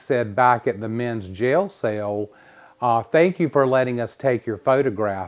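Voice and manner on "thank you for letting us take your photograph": calling out loudly, projected across a room. Retelling what you called back at the men's jail cell, in a loud voice. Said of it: "in a loud voice".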